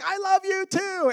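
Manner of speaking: very high, long, drawn-out called-out yell. Retelling how a lady with the tickets called out after them, the speaker re-enacts yelling back. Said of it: "And I'm yelling back".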